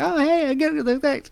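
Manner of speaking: put-on very high, young heroic voice. Describing a voice actor's live-stage bit, doing a young Luke impression. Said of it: "him do Luke, like young Luke".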